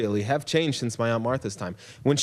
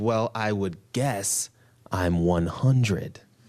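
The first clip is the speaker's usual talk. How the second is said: put-on snarling voice; 3 semitones lower than usual. Retelling how a woman answered a man's remark: retelling a snarl. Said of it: "she snarls in that way that she she can do".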